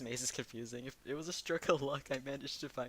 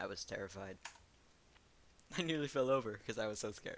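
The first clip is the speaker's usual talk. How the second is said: dry, expressionless deadpan with nothing sold; 3 semitones lower than usual. Answering Ifrita about being scared by a costume: deadpan.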